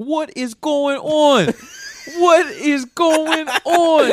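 put-on very high, loud, drawn-out thick Baltimore accent. Retelling a turbulent flight, imitating a passenger with a Baltimore accent. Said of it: "sounds like the most Baltimore guy ever".

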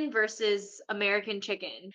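plain

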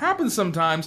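mimicked siren voice, high and sing-song.

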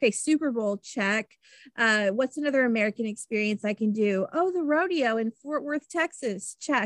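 ordinary talk, nothing marked

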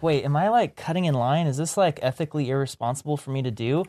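plain

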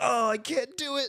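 very high, fake helpless whimper. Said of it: "he's just like".

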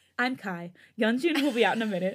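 normal talking voice

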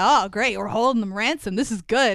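put-on excited speech. Retelling a show scene, quoting a character: imitating excited speech. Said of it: "all excited".

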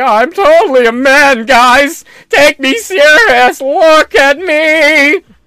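exaggerated, very high, very loud, slow mocking voice. Speaker mocking how a group of people talks, mocking exaggerated voice.

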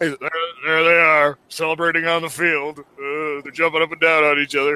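put-on depressed broadcaster voice. Retelling a broadcast call, imitating a depressed Mike Shannon. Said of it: "Mike Shannon goes into a horrible but very, very enjoyable depression".

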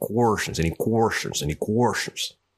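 put-on American southern accent. Retelling how a seventh grade history teacher said the word question: imitating Mister Payne's southern accent. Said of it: "he had a southern accent".

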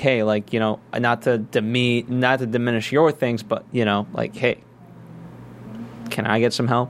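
ordinary talk

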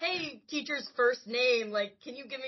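play-acted shouted calling out. Retelling a book scene where a character shouts at a teacher: imitating a shout. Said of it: "shouts at him over the god mic".

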